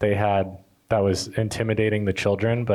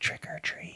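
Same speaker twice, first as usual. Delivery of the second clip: very soft, very quiet, barely audible whisper. Retelling how a child answered a parent: imitating a soft whisper. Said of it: "would whisper into their ear so softly".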